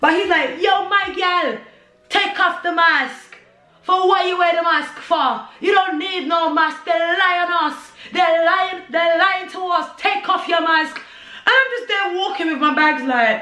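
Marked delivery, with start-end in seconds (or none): 0.6-10.9 weak, unconvincing, clumsy put-on Jamaican accent. Retelling what a man said to her while walking with her bags, bad Jamaican accent. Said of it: "my Jamaican accent is not good".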